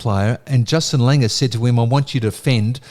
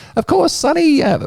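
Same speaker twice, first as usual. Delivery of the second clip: very high, squeaky, tiny little voice. Retelling a remark to Sonny after he wins the hole, in Don Bradman's little squeaky voice. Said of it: "Don Bradman had this little squeaky voice".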